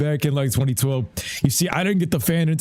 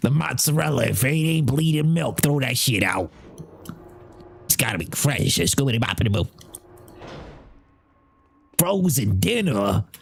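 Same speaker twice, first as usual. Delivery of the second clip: put-on old New York Italian man voice. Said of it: "boy sound like an old Italian deli guy".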